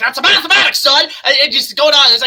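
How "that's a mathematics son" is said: put-on cartoon character voice. Describing a favourite remix from the Looney Tunes: Foghorn Leghorn voice. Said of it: "Foghorn, like".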